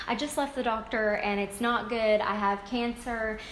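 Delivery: ordinary delivery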